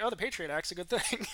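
ordinary delivery

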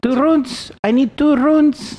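put-on heavy, thick Russian accent, very high and loud. Retelling a scene, quote the shouted demand in a thick russian accent. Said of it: "thick Russian accent".

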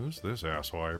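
very quiet, hushed, crude, unchivalrous aside. Leaning in to quietly ask who the stranger is: very unknightly tone. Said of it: "with a very unknightly tone go".

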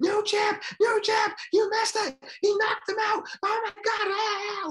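put-on wild, very high, frantic shrieking. Recounting going wild while mom held them back and dad asked why: retelling a scream. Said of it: "I start screaming".

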